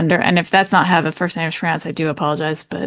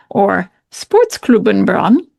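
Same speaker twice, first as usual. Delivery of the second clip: put-on faux German accent; 3 semitones higher than usual. Introducing a new defender's former club, saying its name in a faux german accent. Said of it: "in my faux German accent".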